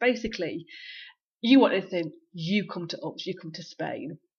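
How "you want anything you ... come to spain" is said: menacing, threatening, pressing and insistent delivery. Retelling an offer she was given, mock-threatening. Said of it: "It was pretty threatening".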